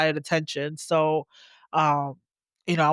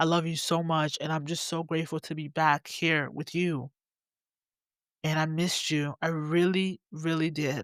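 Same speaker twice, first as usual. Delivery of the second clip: voice near tears, holding back crying; 4 dB quieter than usual. Speaker addresses the audience right after a prayer, holding back tears. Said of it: "I really want to cry".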